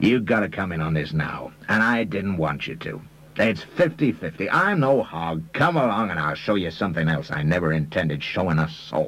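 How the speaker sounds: plain reading voice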